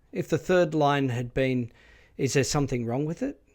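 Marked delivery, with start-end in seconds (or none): 2.1-3.3 pitch going up at the end on it. Explaining default question intonation, reading a line with rising pitch at the end. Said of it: "with the rising contour, as I have just done".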